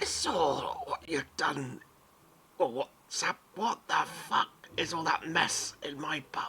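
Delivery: high, feeble, frail, pathetic-sounding voice. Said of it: "very much like Yoda, very pathetic sounding".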